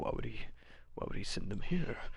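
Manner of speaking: muttering and whispering under breath. Voicing a creature talking to himself, Gollum style: muttering and whispering. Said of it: "mutters and whispers".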